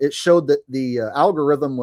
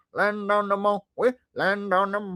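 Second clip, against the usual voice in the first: stupid, silly, goofy voice, pitched higher; 6 semitones higher, 7 dB quieter than usual. Reading a chat comment, then doing an impression: stupid impression of the Land on the Moon guy. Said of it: "my stupid impressions".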